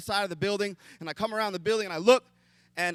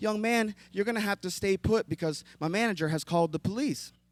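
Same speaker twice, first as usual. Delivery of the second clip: mock sugary-sweet voice. Retelling the voice over his shoulder as he was held down, in a sweet voice. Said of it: "the sweetest voice comes over my shoulder".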